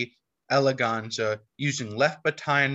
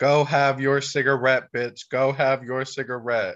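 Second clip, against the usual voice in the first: ordinary talk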